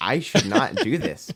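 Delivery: put-on, unsteady voice with a little tremor. Retelling what a man said during a live stream, imitating a trembling voice. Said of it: "tremor in his voice".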